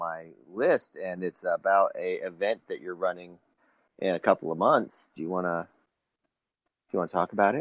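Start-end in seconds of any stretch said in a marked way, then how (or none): 5.1-7.6 sultry, sexy, seductive voice. Asking another speaker to talk about their event: mock seductive voice. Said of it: "That was really seductive".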